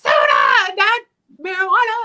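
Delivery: high, loud, mock exasperated, indignant shout. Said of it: "And I'm like".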